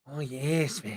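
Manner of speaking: eerie, menacing, soft, creepy little voice. Trying to recall an actor's name, you demonstrate his voice, imitating a creepy German film actor. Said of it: "Like he had that kind of voice".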